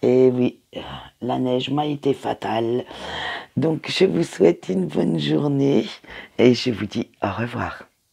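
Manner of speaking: high voice, cracking and breaking up. Speaker signs off to listeners after the snow hurt her voice, cracking voice. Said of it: "j'ai la voix qui déraille".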